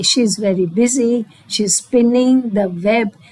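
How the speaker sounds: ordinary delivery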